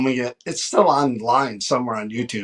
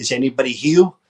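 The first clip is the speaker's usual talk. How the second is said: put-on Brooklyn accent. Sharing a fond memory of a team member, imitating John DeMonico's Brooklyn accent. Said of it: "he had the Brooklyn accent".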